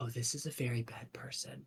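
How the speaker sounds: hushed whisper. A player voicing their character, holding Ellie close while passing him, whispering. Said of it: "hold Ellie very close and whisper".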